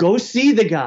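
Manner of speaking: put-on slow, high screaming. Retelling how a father answered news of an investor: imitating a father screaming. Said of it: "My dad screams at me".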